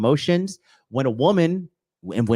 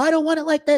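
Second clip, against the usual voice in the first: very high, indignant, angry outburst. Retelling how an acquaintance reacts when she doesn't get her way: imitating someone getting angry. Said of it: "get angry".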